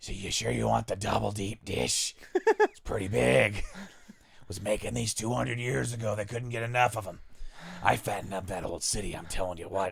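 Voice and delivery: put-on ghoul character voice. Acting out a burnt-skinned ghoul in a Chicago Fallout game: put-on ghoul voice. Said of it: "he's talking like this".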